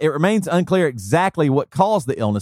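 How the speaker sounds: plain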